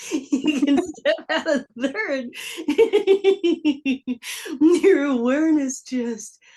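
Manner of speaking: high, loud laughing delight.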